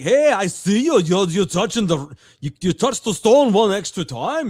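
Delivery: clumsy, bad put-on Swedish accent. Retelling what the swedish guy said during curling, in a bad swedish accent. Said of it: "I can't do a Swedish accent".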